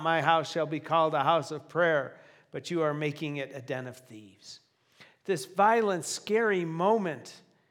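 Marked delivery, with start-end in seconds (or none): none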